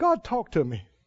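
weeping, tearful, crying, begging voice. Retelling praying again and again: imitating his past crying. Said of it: "I was crying for the ten thousandth time".

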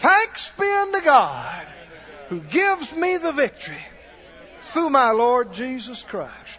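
high, loud, slow, bold proclaiming voice.

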